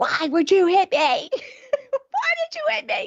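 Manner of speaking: very high, loud screaming. Retelling confronting a man who hit her: retelling own screaming. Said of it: "I'm screaming".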